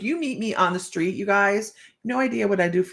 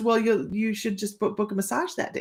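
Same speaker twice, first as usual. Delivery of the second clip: snide delivery; 2 semitones higher, 3 dB quieter than usual. Retelling what the lady behind the desk said: imitating a snarky remark. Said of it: "she's being snarky".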